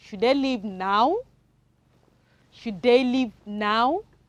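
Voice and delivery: rising question tune, pitch climbing on now. Reading a question aloud together with the children, rising question intonation. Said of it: "it's going up because it's in form of question".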